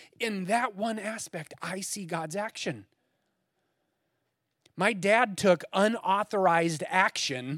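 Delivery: slow words, choked up with emotion. Recalling his dad rescuing him, a speaker says he sees god's action: choked up. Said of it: "I get a little bit choked up".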